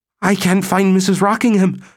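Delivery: shrill, very high, panic-stricken shriek. Dr. Babel appears at the door and speaks, shrill with panic. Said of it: "In a voice shrill with panic".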